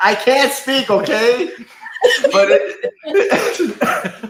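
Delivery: high, loud, laughing through the words.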